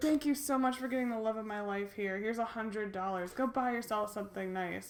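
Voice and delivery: ordinary talk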